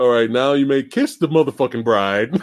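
put-on gangsta-style voice. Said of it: "him fucking La Gangsta style".

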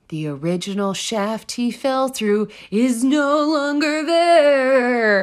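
eerie theatrical delivery. Reading out a quoted statement as a dramatic rendition, in a mock-spooky voice. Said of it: "You tried your spookiest".

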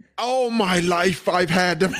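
failed put-on accent that sounds Scottish. Put on the spot to do an accent, the speaker makes a bad accent attempt, sounds Scottish. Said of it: "No, it's coming out Scottish".

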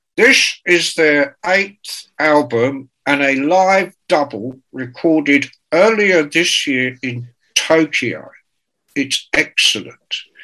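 British radio announcer voice, newsreader-style presenting. Retelling how a rival music-channel presenter read out tour dates: imitating Dante Benuto's way of talking. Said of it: "he used to talk like this".

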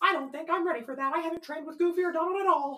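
very high, cartoonish voice. Doing a practiced impression for the others: Mickey Mouse voice. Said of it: "Would you like to hear my, uh, Mickey Mouse?".

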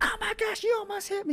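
very high, screamed outburst. Retelling a lady outside the car yelling at the grandma, retelling a lady screaming. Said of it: "she's like screaming".

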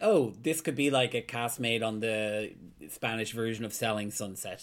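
ordinary talk, nothing marked

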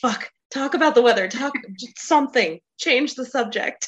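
high, frantic, panicked, scrambling for words. Voicing a character's panicked inner thoughts: imitating a panicked voice. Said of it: "He was totally having a panic moment".

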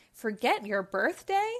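playful, teasing, ribbing tone. At his surprise party, answering the man who thought his birthday was forgotten; teasing. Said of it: "Wendy teased".

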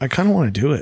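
put-on quiet murmur under breath. Retelling the daughter's remark while they watch videos: imitating a quiet under-breath voice. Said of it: "kinda quiet under her breath".

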